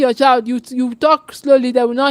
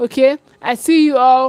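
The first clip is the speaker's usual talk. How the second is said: ordinary talk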